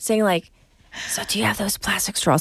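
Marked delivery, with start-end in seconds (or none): 1.1-2.4 whispering, much quieter. Retelling the roommate's question at a drive-through; retelling a whisper. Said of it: "he whispers as we're going through the drive-through".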